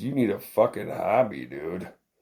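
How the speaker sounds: put-on sorrowful, tired-out, weary tone. Acting out something that looks up sadly and speaks: speaking sadly. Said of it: "looks up at you sadly and says".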